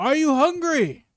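shrill, very loud call carrying across distance. Voicing a character whose every line comes out loud, yelling. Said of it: "I would be yelling".

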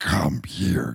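weird processed voice with echoing reverb. Describing the Voice's reverb effect in a film: imitating an echoing reverb voice. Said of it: "this reverb effect in which it's like".

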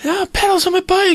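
put-on shrill, very high, cross little-boy shout. A parent retells one of the boys yelling in their face, retelling a kid's yell. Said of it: "yelling in my face".

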